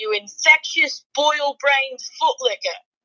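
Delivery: put-on British accent. Delivering his own insult in the fashion the host wants, British accent. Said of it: "I'll deliver it in a British accent".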